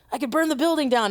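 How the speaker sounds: put-on half-joking anger. Retelling what they said at the ovens: imitating own angry joke. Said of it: "I got all pissed off".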